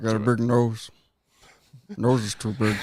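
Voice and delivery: put-on creepy killer voice. Putting on a voice that sounds like Buffalo Bill. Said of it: "Still sounds like Buffalo Bill from Silence of the Lambs".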